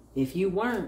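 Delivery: ordinary delivery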